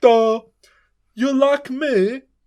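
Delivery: very high, very slow, dragged-out dim dopey drawl. Asking Calvin about a series, mimicking the butler in a stupid voice. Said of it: "Doesn't the butler have a stupid voice".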